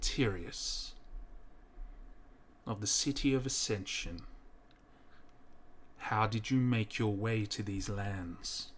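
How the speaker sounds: judgmental priest voice. A hooded priest questions a bound prisoner in his cell; telepathic priest voice.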